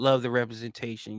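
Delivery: sarcastic tone. Answering a question, the speaker replies: sarcastic. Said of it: "You can hear the sarcasm in my voice".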